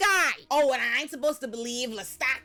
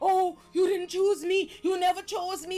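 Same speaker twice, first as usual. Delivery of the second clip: imitated screaming; 6 semitones higher than usual. Retelling how Lestat screamed at Louis while beating him: imitating Lestat screaming. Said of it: "But you screaming about".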